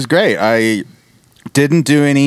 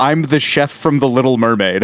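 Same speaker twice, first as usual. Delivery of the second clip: ordinary talk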